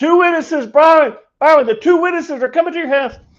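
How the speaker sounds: very high, full-throated shouting. Retelling how they shouted a message to byron, re-enacting the shout. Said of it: "shout it again".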